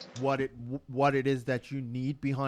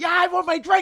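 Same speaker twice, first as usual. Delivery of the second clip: acted-out shout, higher and louder; 11 dB louder than usual. Acting out a rude customer at the bar: imitating a customer yelling. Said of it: "You're fucking yelling at me like this?".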